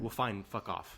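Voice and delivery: ordinary talk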